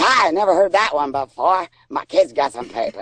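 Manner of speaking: bad Boston accent. Retell how a man replied when you told your kid to grab his papers, bad Boston accent. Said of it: "that's my bad Boston accent".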